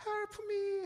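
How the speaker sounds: very high damsel-in-distress pleading. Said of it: "아리따운 여자가".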